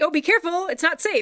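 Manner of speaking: loud, high-pitched calling voice. Describing library patrons warning their small child: imitating a loud warning. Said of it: "And they say very loudly".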